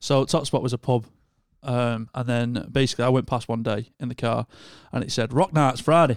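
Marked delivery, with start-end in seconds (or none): 5.3-6.2 put-on Wigan accent, read-out delivery. Retelling how the pub sign announced its rock nights: Wigan accent. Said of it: "it said it in a Wigan accent".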